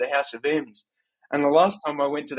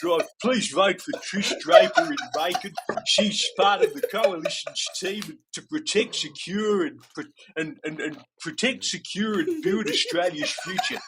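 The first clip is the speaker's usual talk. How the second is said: put-on Australian accent, pitched higher; 4 semitones higher than usual. Doing a recorded political ad, voting plea: John Howard impression. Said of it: "Spoken by me, John Howard".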